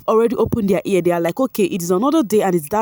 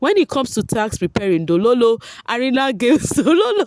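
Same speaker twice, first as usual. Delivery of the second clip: giggling and laughing through the words; 4 semitones higher than usual. Reading out a viewer's question to Mercy fans, the host is laughing while reading. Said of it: "I am laughing".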